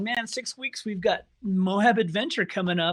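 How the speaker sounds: normal talking voice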